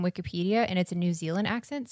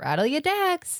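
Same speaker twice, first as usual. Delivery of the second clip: rising inflection, much higher; 7 semitones higher than usual. Saying a phrase to Mandy as it's written, with rising inflection. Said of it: "I go up with inflection".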